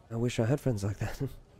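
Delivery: muttered under the breath, half aloud. Retelling what a woman said while looking away, unsure it was meant aloud: under her breath. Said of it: "under her breath".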